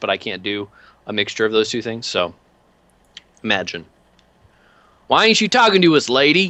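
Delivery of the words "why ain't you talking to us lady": pushy, aggressive, in-your-face heckling voice, pitched up. Voicing an aggressive catcaller confronting the player character: catcalling thug voice. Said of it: "they're not doing the Eastern European half".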